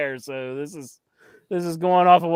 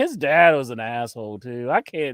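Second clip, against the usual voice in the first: ordinary delivery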